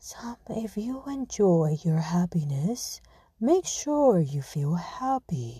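low, slow stock podcaster voice. Mocking how some people talk on podcasts: imitating a typical podcaster voice. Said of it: "some people like to talk like this, like in podcasting".

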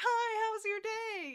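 cute, cheery, very high and loud voice. Retelling how he came downstairs and greeted her while she sobbed, cute and cheery. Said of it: "he's cute and cheery".

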